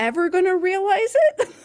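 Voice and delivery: shrill, very high, full-volume scream. Retelling what the speaker once screamed, retelling a scream. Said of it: "I was just screaming like".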